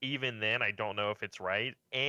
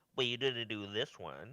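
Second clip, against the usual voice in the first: mock dim-witted voice, quieter; 5 dB quieter than usual. Retelling viewer complaints about a fighting game roster: imitating an unintelligent chatter. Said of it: "Impersonation of, uh, of a chatter".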